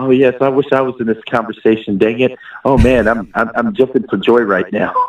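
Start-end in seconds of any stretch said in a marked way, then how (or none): none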